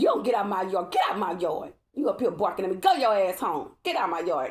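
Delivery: put-on scolding tone. Retelling ordering a barking dog out of the yard: reenacting telling off a dog. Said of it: "That's how I was talking to that dog".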